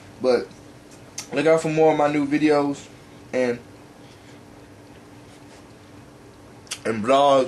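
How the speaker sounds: talking while eating, mouth full. Signing off a vlog to subscribers, talking with mouth full. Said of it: "I'm like talking with my mouth full".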